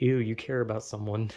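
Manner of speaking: usual speaking voice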